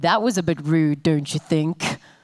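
very low, deep, angry voice. Retelling what the man who switched off the pub's power said, imitating a deep, angry voice. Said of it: "I can't do the deep, angry voice justice".

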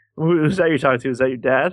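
ordinary delivery

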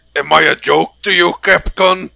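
rough, creaky, grating, rasping monster voice. Quoting a YouTuber's joke reaction to a Capcom trailer, in a Zamtrios voice. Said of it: "making a Zamtrios voice".

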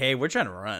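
ordinary talk

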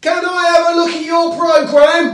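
booming yell, very high and very loud. Retelling a question to the person next to them: imitating own shout. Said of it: "You don't need to shout".

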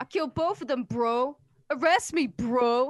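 high, put-on, full dude-bro voice. Retelling a man confessing to a cop, in a bro dude voice. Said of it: "I want him to just be a Kyle bro dude".

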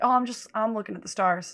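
ordinary delivery

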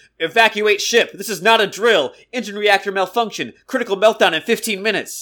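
loud, yelled announcement sounding like over a loudspeaker. Telling a story, act out a voice yelling over the ship's loudspeaker. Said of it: "a voice yells out over the loudspeaker".

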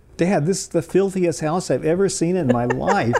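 put-on little girl voice, high, loud, top of voice. Retelling a young daughter's outburst in a friend's house: imitating a child shouting. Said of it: "she shouted at the top of her voice".

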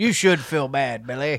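deep, low chest voice, sound-alike impression. Scolding someone named Billy as a joke: sounding like Morgan Freeman. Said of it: "You sound like Morgan Freeman".

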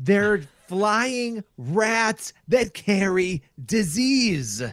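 thick New York accent, very slow, drawn out. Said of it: "the most New Yorker you've ever sounded".

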